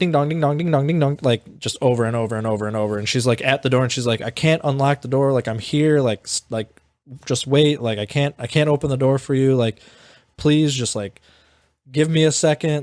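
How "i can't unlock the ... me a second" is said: mock, desperate, rambling pleading tone. Retelling how she begged the ringing doorbell to wait: imitating someone pleading. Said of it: "basically pleading with the fucking doorbell".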